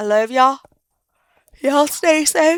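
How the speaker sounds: tired words through a yawn. Signing off to the folks watching, yawning and tired. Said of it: "I am tired because I'm yawning".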